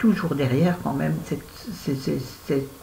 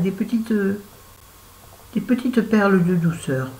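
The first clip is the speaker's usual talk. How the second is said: put-on accent of the south of France; 4 semitones higher than usual. Reviewing books she loved, describing them in a put-on southern french accent. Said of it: "je prends l'accent du sud".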